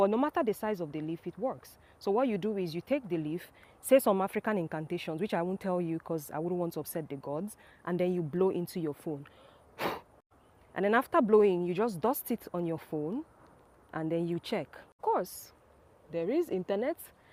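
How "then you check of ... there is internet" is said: ordinary talk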